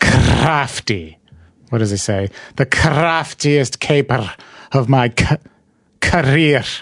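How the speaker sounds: strongly trilled r's, near-Scottish. Working out a tv character's cadence, repeating his catchphrase with heavily rolled r's, almost scottish. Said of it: "It sounds almost Scottish the way I do it".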